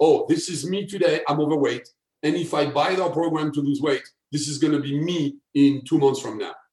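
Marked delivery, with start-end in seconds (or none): none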